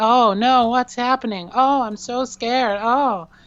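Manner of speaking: very high anime dub female voice. Complaining about anime dubs, show how all the females sound: anime dub female voice. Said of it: "all females sound like this".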